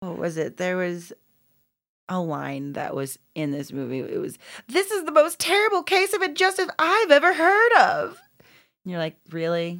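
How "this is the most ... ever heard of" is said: very high, loud put-on cartoon pig voice. Recalling a line from a movie while discussing it, Wilbur voice. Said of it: "I said that in the Wilbur voice".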